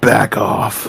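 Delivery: rough, gruff soldier voice, whispered and hushed. Asked what to say to someone in his face, the player answers in a gruff soldier voice. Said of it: "In a real gruff soldier voice".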